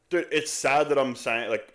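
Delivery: ordinary talk, nothing marked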